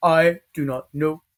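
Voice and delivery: put-on derpy voice. Asked what his internal voice sounds like, doing Ghost's derpy voice. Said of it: "this is Ghost's voice because he is kind of derpy".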